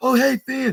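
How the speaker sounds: shrill, high, excited shriek dripping sarcasm. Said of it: "I shriek with excitement and sarcasm".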